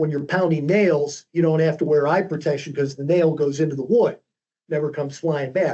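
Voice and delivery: ordinary talk, nothing marked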